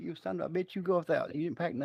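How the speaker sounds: put-on high woman's voice. Retelling what his wife would say when he leaves: imitating his wife's voice. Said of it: "The way you did her voice".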